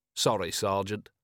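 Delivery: plain reading voice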